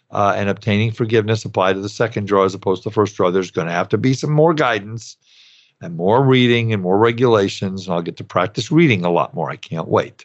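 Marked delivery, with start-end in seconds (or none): 7.8-10.2 sarcastic, dry delivery. Explaining second-draw loan forgiveness rules to the audience, sarcastic. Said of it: "That was sarcasm folks".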